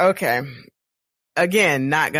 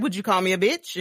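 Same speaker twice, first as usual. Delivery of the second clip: normal talking voice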